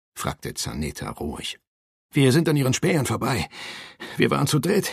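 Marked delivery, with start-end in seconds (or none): 2.2-5.0 high, breathless stammer, short of breath. A young rider reports to Zaneta after a hard ride, stammering breathlessly. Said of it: "stammelte der junge Reiter atemlos".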